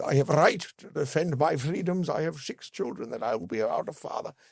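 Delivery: weak put-on Irish accent. Retelling a defendant's plea to the court, not-great Irish accent. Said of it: "I won't do it in a great Irish accent".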